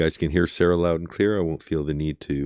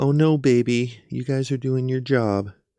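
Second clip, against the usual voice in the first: snide, mocking parroting tone, pitched up; 8 semitones higher, 4 dB louder than usual. Repeating a woman's words for listeners who may not hear them, mocking her tone. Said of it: "I'm also enjoying mocking her tone".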